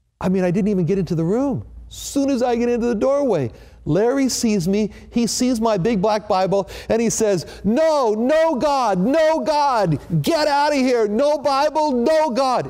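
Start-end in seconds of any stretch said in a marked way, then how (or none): 7.6-12.7 high, very slow, stretched-out shouting. Retelling how a patient reacted to the Bible: imitating someone yelling. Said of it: "he was yelling at the top of his lungs".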